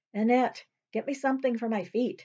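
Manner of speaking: impatient. A woman asks another woman to fetch something, impatient. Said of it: "she said impatiently".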